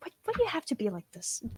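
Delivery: high, hushed whisper. Voicing a character who closes a book before bed: whispering in character. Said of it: "And she just whispers".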